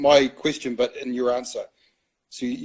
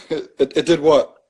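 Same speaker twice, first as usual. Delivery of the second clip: talking through laughter, louder; 2 semitones higher, 8 dB louder than usual. Reacting to the other speaker's story about losing something: laughing while talking. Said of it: "I'm laughing".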